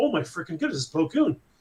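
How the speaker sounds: normal talking voice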